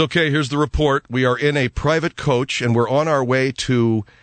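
usual speaking voice

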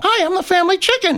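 very high, squawking parrot voice. In a mock restaurant ad, the family chicken introduces itself in a parrot-like voice. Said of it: "That sounded like a parrot".

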